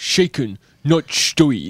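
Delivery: put-on Scottish accent with burr on every word. Asked by the host for a quick James Bond impression, [name] does a Sean Connery impression. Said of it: "That was the Scottish accent".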